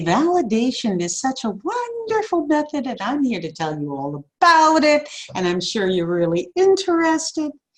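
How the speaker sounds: patronizing, talking-down tone. Showing an inappropriate way to address adults, condescending talking-down tone. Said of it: "in this kind of voice tone ... because I'm talking down to you".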